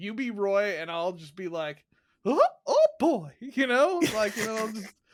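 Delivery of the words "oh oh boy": pushed way up in pitch and loud. Suggesting a podcast done in a cartoon voice: Mickey voice. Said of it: "I could do the Mickey thing".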